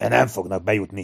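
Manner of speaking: ordinary delivery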